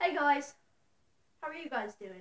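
spoken in a British accent. Showing the one accent that can be done well: british accent. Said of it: "unless it's a British accent".

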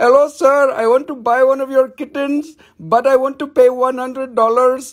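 put-on Indian accent, voice disguised. Retelling a prank call to Daddy about buying a kitten: put-on Indian accent. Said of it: "I called him with the Indian accent".

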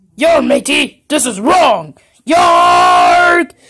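slow, worked-up, angry character voice. Voicing a pirate toy who finds something wrong: Purple Foxy acting triggered. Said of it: "Purple Foxy's triggered".

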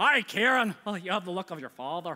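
put-on affected Scottish accent. Acting out a week of talking to a kid in a put-on scottish accent. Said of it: "I spoke in a Scottish accent the whole week".

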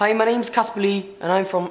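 put-on Irish accent. Trying to repeat his intro in a South African accent, he slips into a put-on Irish accent. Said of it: "Ireland. Again".

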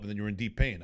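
ordinary talk

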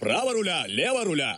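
ordinary delivery, nothing marked

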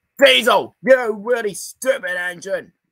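very high, loud scream. Retelling what an enraged worker screamed at an engine: imitating someone screaming. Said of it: "He screamed out".

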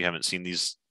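plain

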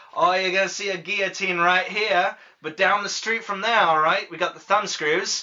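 put-on Australian accent. Imagining someone selling tourist maps back in the day, Australian accent. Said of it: "Why is he Australian?".

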